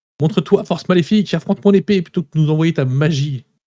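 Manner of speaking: enraged, furious, high-pitched battle-cry shout. Playing his character, who just kicked a helmet in annoyance: angry shout. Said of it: "Peut-être même que je crie".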